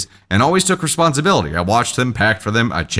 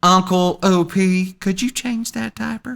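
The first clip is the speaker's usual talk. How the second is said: put-on sweetest, syrupy, sugary, pitched-up voice; 8 semitones higher than usual. Retelling a request made at a family dinner: imitating a sweet voice. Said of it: "says in the sweetest voice".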